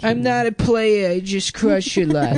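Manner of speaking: put-on, heavy New York accent, pitched way up. Acting out an uptown guy from the Bronx: New York accent. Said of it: "It's a New York accent".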